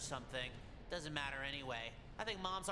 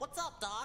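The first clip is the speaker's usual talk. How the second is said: higher-pitched put-on cartoon character voice; 10 semitones higher, 4 dB louder than usual. Showing how one would sound talking like a cartoon: cartoon voice. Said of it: "If I talked like a cartoon, I'd go".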